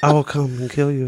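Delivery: half-whispered, gravelly action-star style voice. Mocking how an action star talks in films: imitating Steven Seagal half-whispering. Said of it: "he just whispers".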